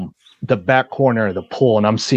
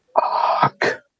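mock held-in scream at talking volume. Retelling being hogtied with an arm wrenched up: imitating own scream. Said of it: "I just screamed".

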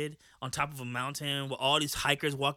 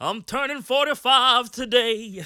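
put-on southern preacher voice, higher and louder; 9 semitones higher, 10 dB louder than usual. Doing a Martin Luther King impression: Martin Luther King impression. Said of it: "Martin Luther King impression".

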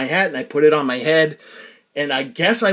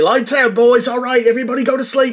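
put-on poor British accent drifting Australian, pitched up; 8 semitones higher, 4 dB louder than usual. Speaker quoting the British boys at lights out, in a bad British accent impression. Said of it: "That sounds like an Australian".

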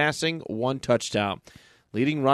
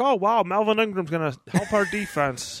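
slight put-on frog puppet voice, pitched up; 7 semitones higher than usual. Talking about the Chiefs, voicing a remark in a Kermit the Frog voice. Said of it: "It's like a little Kermit the Frog-esque".

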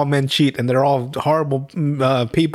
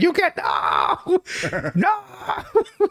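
mock outrage, very high, very slow, swooping, drawn out. Retelling a movie scene where a man is just so mad: imitating someone furious. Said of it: "He's just so mad".

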